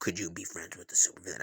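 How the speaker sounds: put-on sinister, loaded, menacing, threatening tone. Speaker retelling a question once asked of him, mock-menacing. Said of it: "I say that so menacingly".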